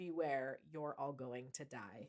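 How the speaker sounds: deep, soft put-on toy-dinosaur voice. Retelling a claim that a toy dinosaur spoke a warning: deep voice. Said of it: "in a deep voice said".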